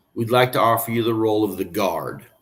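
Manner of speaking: normal talking voice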